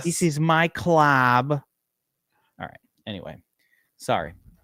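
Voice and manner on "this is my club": very slow, drawn-out bad Russian accent. Quoting a Rounders scene, John Malkovich Russian impression. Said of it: "my impersonation of John Malkovich impersonating a Russian".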